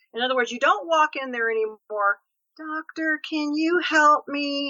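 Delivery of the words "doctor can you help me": meek, dependent, passive, pleading tone, very slow. Acting out walking into a doctor's office, meek, passive voice. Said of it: "You hear the passivity in my voice".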